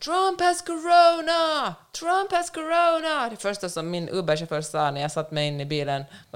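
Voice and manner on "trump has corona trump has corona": shrill, very high, slow, drawn-out screaming. Retelling how people ran into the street shouting the news: retelling people screaming. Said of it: "Skrek så här".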